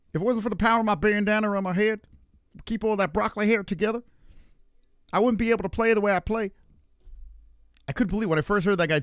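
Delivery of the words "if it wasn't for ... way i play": high, mocking put-on voice. Mocking a quarterback he dislikes: mocking Mahomes voice. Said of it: "let's make him talk like that".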